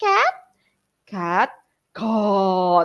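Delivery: tiny voice swelling into a big one, drawn out. Teacher shows other teachers a classroom trick, small voice growing to big voice. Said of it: "small voice to the big voice".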